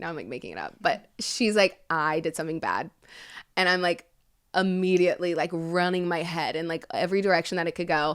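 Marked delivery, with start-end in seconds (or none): 1.9-2.9 put-on stoic tone, lower pitch. Retelling a call where she confessed something, imitating her silent, stoic tone. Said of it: "silent and stoic".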